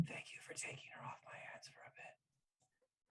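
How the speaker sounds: soft whisper, close in the ear. Voicing a character hugging a player and speaking into their ear: whispering. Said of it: "she's gonna whisper".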